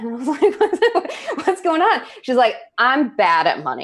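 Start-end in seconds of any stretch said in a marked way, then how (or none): 2.8-3.9 put-on firm, strong, not-soft tone. Retelling what a six-year-old girl said, retelling a strong declarative. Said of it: "It was like a strong declarative".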